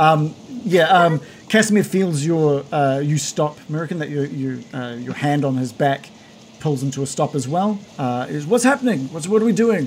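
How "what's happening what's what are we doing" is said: yelling at high pitch. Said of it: "yell, yell over the wind".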